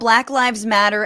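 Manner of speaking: plain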